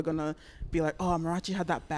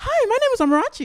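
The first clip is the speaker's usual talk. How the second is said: very high, shrill, very loud switched-up voice; 12 dB louder than usual. Showing how she sounds when code-switching in other spaces: imitating her code-switching voice going up. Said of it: "And it just goes up".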